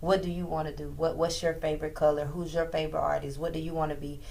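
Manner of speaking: usual speaking voice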